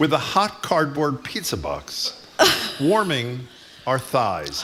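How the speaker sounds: very slow, drawn-out reading.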